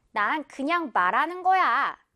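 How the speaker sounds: plain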